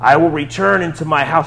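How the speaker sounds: demon voice of an unclean spirit. Reading a passage aloud, voicing the unclean spirit in a demon voice. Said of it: "How do you like that voice? That's kind of like a demon voice".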